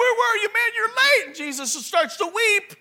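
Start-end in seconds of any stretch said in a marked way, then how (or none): 0.0-1.3 high-pitched, nagging, reproachful scolding. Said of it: "they were like".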